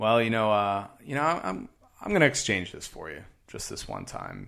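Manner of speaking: acted patronizing, talking-down tone, swooping sing-song. Retelling a dispute over a hand tool; mimicking a condescending tone. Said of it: "kind of condescendingly".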